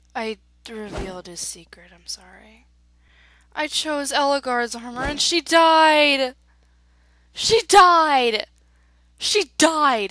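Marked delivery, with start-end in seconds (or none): 3.5-10.1 really angry, lingering on each died, drawn out. Reacting to a character's death in the game: angry. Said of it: "And I'm so mad".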